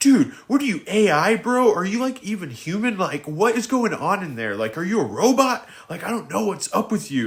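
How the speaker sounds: mock, high-pitched, angry, pissed-off rant. Retelling going off on a fellow resident: retelling an angry rant. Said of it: "I was pissed".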